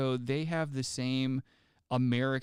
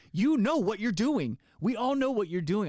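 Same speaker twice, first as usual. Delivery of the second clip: mock angry, accusing, upset outburst, pitched up; 8 semitones higher, 4 dB louder than usual. Retelling confronting a customer who acted like they were crazy: own upset outburst. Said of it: "I got so upset".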